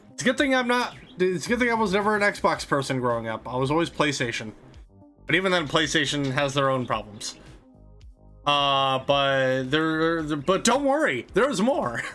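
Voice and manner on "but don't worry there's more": voice breaking and cracking up high mid-phrase. Talking about Xbox controllers, voice cracks. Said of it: "voice crack".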